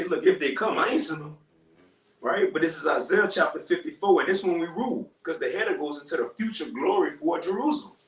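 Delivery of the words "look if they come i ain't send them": normal talking voice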